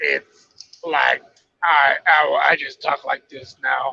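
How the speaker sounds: rough, creaky speaking voice. Imitating how she talks now on Joe Rogan, rough-voiced Hannah Montana impression. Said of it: "she has a rough fucking voice".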